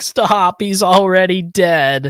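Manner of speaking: acted, high, very slow, drawn-out childlike crying. Retelling a cartoon scene where kids beg: imitating crying kids. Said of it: "And the kids are crying".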